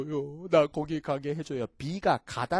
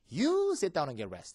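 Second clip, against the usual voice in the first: you stressed hard, rest said plainly. Explaining how to emphasize an english command, stress on you. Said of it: "you의 액센트를 넣어".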